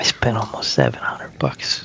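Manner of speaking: quiet whispering. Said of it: "I have to whisper".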